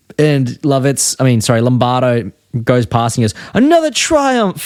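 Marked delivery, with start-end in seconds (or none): 3.6-4.7 high, over-the-top, ecstatic, thrilled gush. Retelling a cartoon scene about a painted sign: imitating Lombardo, over-the-top ecstatic. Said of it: "over the top ecstatic about the crappiest things".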